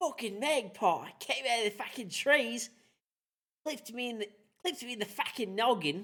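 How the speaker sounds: very high, bad put-on Australian accent. Answering a prompt to sound Australian, in a bad Australian accent. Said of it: "That was a shitty Australian accent".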